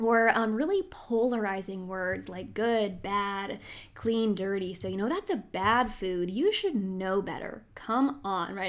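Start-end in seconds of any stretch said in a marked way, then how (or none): 4.7-8.5 snarky, sassy put-on mean-girl voice. Voicing the food police scolding someone over a bad food: mock sassy mean-girl tone. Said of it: "It's this very like sassy, mean girl type of tone".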